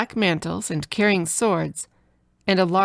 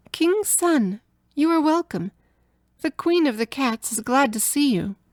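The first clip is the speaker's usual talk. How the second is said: sweet, small, high storybook voice; 6 semitones higher than usual. Narrator voices a cat speaking to the prince, in a sweet little voice. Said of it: "in a sweet little voice that went straight to his heart".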